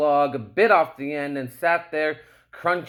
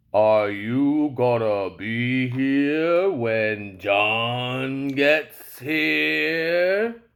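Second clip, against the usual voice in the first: low, deep, gravelly bass voice, stretched; 3 semitones lower than usual. Narrator reading a creature speaking to a man, in a low, deep, gravelly voice. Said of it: "said to the man in a low, deep, gravelly voice".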